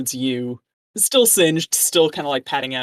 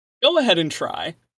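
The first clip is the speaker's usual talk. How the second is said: put-on elderly man's voice; 4 semitones higher than usual. Voicing a character who dares a player to attack: old man voice. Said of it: "you're enjoying my old man voice?".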